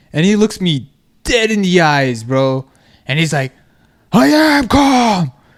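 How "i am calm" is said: very high, loud, worked-up agitated yell. Retelling a guy told to calm down who answers: imitating an uncalm voice. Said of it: "with his uncalm voice".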